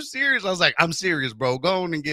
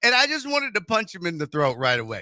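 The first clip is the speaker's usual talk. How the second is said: normal talking voice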